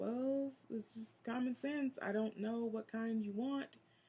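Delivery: soft muttered grumble. Retelling walking away from a customer's door: imitating muttering under breath. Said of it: "under my breath".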